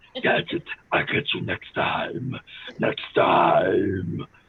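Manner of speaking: deliberately bad cartoon villain voice. Joking about graduating, then doing the world's worst Dr. Claw impression. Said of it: "the world's worst Dr. Claw impression".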